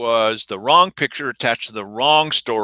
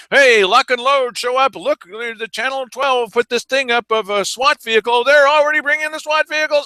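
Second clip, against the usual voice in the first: mock yelling, higher pitch; 13 semitones higher, 3 dB louder than usual. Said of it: "Stop yelling, [name]".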